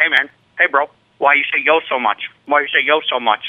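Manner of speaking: put-on intimidating voice. Retelling being confronted face to face on the first day: imitating CT being intimidating. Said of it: "if you're trying to intimidate me".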